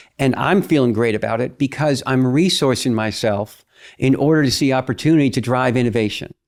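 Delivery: ordinary delivery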